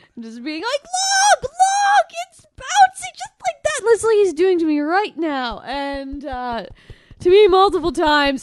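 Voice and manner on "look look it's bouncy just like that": super excited, very high-pitched squeal. Retelling a friend showing off a squishy toy: imitating super excited Errol. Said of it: "in a super excited Errol fashion".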